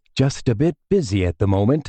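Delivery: quiet, low murmuring voice. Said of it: "I murmured".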